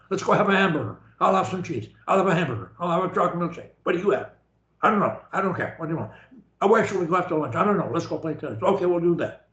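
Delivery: rattled-off, inexpressive, rapid-fire machine-gun chatter. Showing a listener how people their age talk, imitating rapid-fire talking. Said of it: "they talk really fast all the time".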